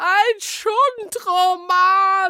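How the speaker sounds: very high, shrill screech. She snatches the book from Smyrna, glances at the cover, shrieking.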